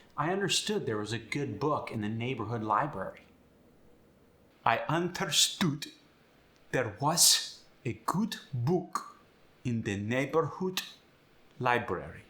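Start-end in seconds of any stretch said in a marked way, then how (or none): 4.7-12.2 put-on slow, deliberate German accent. Giving an example sentence while explaining the accent, speaking with a german accent. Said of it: "speaking with a German accent".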